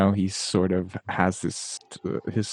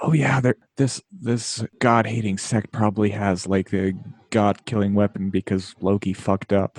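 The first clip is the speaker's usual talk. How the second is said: whispered, in a character voice. Voicing a character leaning to another to share news: whispering in character. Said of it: "leans to Tiffany and whispers".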